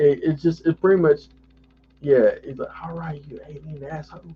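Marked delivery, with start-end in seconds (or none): 2.8-4.2 very hushed half-whisper, under the breath. Quoting a movie character's line to another speaker: imitating a half-whisper. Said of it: "I love how he whispers when he's saying it".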